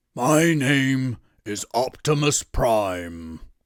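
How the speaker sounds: loud, growly, very slow delivery. Trying an Optimus Prime impression, too growly. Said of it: "too much growly".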